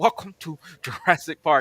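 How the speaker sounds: playful delivery. Retelling a castmate's movie-line bit on set: imitating a jurassic park impression. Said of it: "he's a voice actor, so he's very good at impressions".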